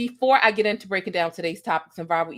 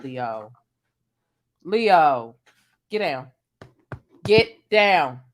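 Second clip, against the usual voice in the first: motherly scolding, lower and louder; 6 semitones lower, 4 dB louder than usual. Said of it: "Sometimes the mom in me comes out".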